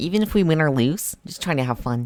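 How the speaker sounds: high, weird nerdy voice. Describing how the character Apple should sound, performing a line: Apple voice, weird nerdy tone. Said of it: "Apple's voice is supposed to be like... that weird nerdy kind of tone in the voice".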